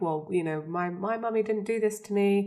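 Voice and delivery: ordinary talk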